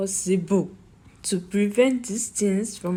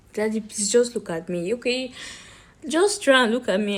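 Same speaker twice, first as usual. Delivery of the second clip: normal talking voice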